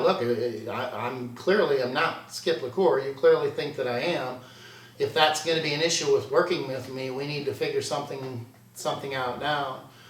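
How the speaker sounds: ordinary talk, nothing marked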